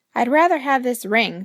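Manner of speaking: plain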